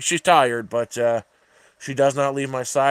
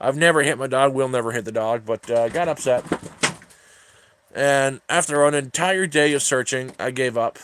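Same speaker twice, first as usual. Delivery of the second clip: ordinary delivery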